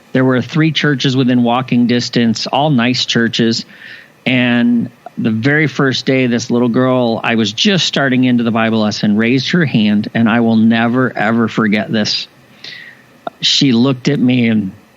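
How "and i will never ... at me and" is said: choked up, emotion catching, voice breaking. Recalling a little girl's question on the first day of a bible lesson, choked up. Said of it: "I get a little choked up when I talk about this story".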